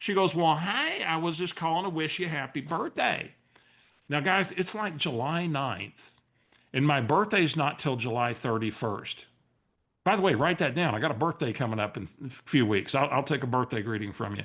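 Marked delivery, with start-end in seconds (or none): 0.3-3.3 put-on sweet, friendly Southern lady accent. Retelling Barbara's phone call to Steve, imitating Barbara, Southern lady. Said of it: "she's a wonderful Southern lady".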